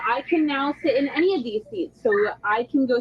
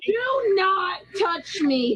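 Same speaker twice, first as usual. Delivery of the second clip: high, very slow, each word drawn out, upset, agitated; 5 semitones higher than usual. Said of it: "please calm down".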